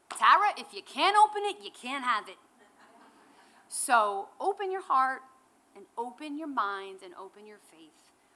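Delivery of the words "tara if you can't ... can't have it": put-on Brooklyn accent, loud. Quoting your mother's wise words to you, Brooklyn accent. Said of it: "in that Brooklyn accent".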